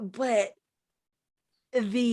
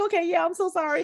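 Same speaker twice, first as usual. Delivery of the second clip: high, loud, fast mock apologetic voice. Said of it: "he was like".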